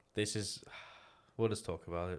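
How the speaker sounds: quiet, pained, sighing voice. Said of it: "I can hear the pain in your voice".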